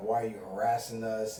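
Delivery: plain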